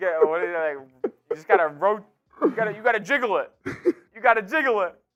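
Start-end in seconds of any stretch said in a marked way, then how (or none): 1.3-4.9 put-on New York accent. Imitating the other speaker's dad on the phone, put-on New York accent. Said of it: "He goes like".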